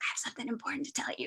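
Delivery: put-on very soft, hushed little-girl whisper. Retelling what a tiny girl first told them, imitating a little girl whispering. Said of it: "and she she whispers".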